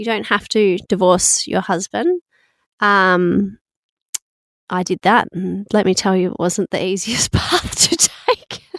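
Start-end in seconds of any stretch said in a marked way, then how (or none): 6.3-8.6 slowed delivery, laughing through the words. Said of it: "I don't know why I'm laughing".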